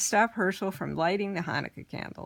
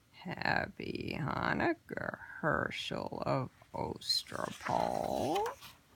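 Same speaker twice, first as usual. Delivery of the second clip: slow, creaking, cracking whisper like breaking bones; 7 semitones lower, 8 dB quieter than usual. A horrible voice greets a man who just sat up, voice like cracking bones. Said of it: "a voice that sounded like the cracking of bones".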